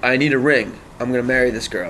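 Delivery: normal talking voice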